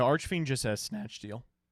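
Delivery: voice cracking. Player discussing a card's effect in a card game chat, voice cracking. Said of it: "That was a voice crack".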